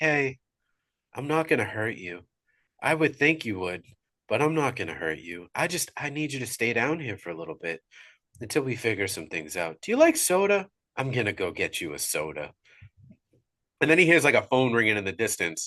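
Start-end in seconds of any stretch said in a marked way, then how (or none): 0.0-12.5 creepily friendly, uncanny kind, reassuring tone. Retelling a film scene, imitating the Grabber's uncanny kind tone. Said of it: "the tone in his voice is just uncanny".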